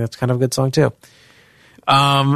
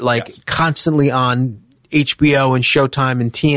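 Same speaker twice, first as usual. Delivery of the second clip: ordinary delivery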